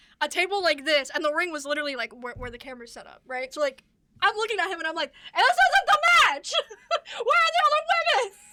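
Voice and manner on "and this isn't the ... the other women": very high-pitched yelling. Retelling yelling at the ref and official during a match: retelling own yelling. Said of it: "I'm literally yelling at the ref".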